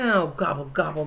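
grumbled, low muttering. Narrator reads Turkey, caught at the egg hunt: grumbling. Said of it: "grumbled Turkey".

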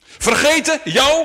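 piercing, very high, very loud outcry. Narrator reads the squirrel crying out to the ant, shouting. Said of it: "Riep de eekhoorn".

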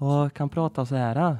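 Värmland Swedish dialect, put on for show. Before calling Tesla Tobbe, the speaker shows another way of talking; Värmland Swedish accent. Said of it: "Värmländska".

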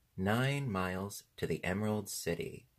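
ordinary delivery, nothing marked

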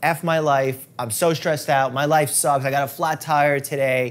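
ordinary talk, nothing marked

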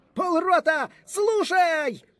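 very high, wild, screeching, frantic shriek. An officer commands his half-company to attention; frantic shriek. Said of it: "Заверещав несамовито офіцер".

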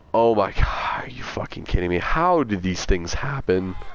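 cracking, breaking voice. Reacting as the car goes wrong during play, voice cracking. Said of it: "My voice just cracked".

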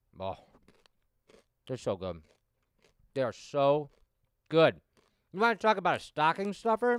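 talking with mouth full. Telling you guys about candy while eating one, chewing while talking. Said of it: "Now I'm chewing and talking to you guys".

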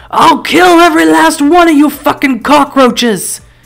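rough, gruff yell. Narrating a story, a massive man steps into the street toward a crowd; gruff yell like swallowed nails. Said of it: "he yells in a gruff voice like he swallowed nails".

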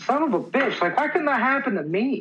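whiny jealous tone.

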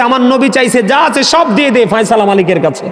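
fervent, high, shouted delivery.

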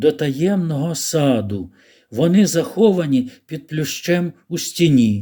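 plain

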